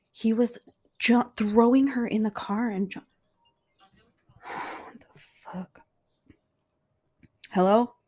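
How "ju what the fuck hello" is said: whispered, furious, livid and trembling, shaking. A caller finally gets through to the police after nobody answered: livid and shaking. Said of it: "I'm like literally livid and shaking".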